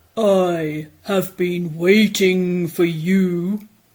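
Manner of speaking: deep, low octopus voice. Narrator reading the octopus greeting the fish in a story, deep octopus voice. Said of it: "said the octopus with a deep voice".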